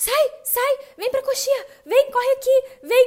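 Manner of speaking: shrill, very high, drawn-out calling shout. Retelling a child shouting from backstage during a performance: imitating someone shouting. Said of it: "o Léo ficava gritando assim".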